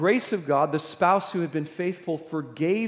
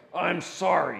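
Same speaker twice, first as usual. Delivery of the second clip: mock begrudging, angry, grudging tone. Retelling a playground kid apologizing to another kid, imitating a begrudging angry apology. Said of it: "begrudgingly with an angry face".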